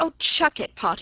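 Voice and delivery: disgusted brush-off tone. A son replies to a companion who is teasing him, murmured in disgust. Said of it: "murmured Bob in disgust".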